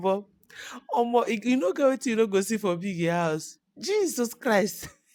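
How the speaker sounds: loud, high talk broken up by laughter. Reacting to a housemate's breakup on Big Brother, laughing while talking. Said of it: "I'm sorry that I'm laughing".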